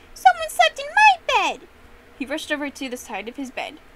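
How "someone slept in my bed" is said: shrieking cub voice, very high, very loud. Reading the Goldilocks story aloud, as Baby Bear to his father: Baby Bear screeching. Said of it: "Baby Bear screeched".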